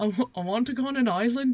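bad put-on Irish accent. Trying out a put-on accent during the story: bad put-on irish accent. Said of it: "That was Irish".

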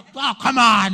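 loud, disappointed, let-down, bummed-out protest tone. Retelling the tattooed man's answer to being teased: imitating a bummed-out reply. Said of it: "it was all bummed out".

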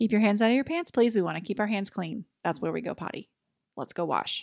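calm tone, no anger or shame. Demonstrating how to correct a child without shaming, in a calm tone. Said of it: "You're just calm".

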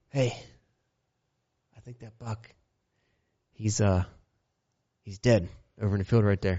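quiet half-whispered voice. Retelling how dad half-whispered up to the stand: imitating dad's half-whisper. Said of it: "He kinda whispers up to me".

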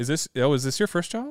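put-on deadpan delivery. Speaker retells a lady asking the couple if it's their first child, imitating deadpan delivery. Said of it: "just very deadpan".

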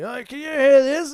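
very high, loud yelling. Driving right beside him on a dual-lane road, retelling his yell. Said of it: "he's yelling at me".

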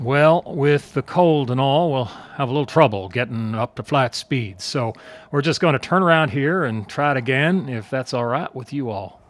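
slow, vaguely Texan drawl. Narrator quoting the pilot over the intercom, slow, vaguely Texan drawl. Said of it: "in a slow drawl".

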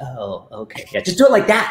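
high, animated voice with swooping pitch. Retelling how stunts get demoed on set: Zack Snyder impression. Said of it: "That's a good Zack Snyder impression".

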